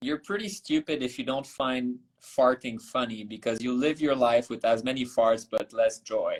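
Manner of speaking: ordinary talk, nothing marked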